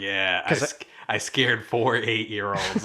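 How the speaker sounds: mock smug, self-satisfied voice. Retelling a character grinning after scaring kids: imitating smug self-satisfaction. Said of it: "the most smug, like, self-satisfaction grin".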